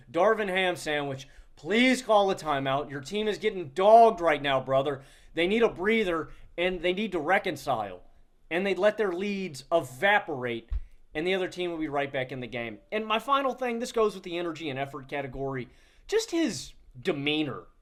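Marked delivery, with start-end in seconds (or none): none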